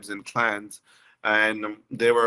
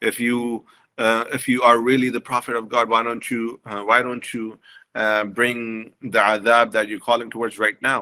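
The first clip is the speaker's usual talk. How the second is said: ordinary talk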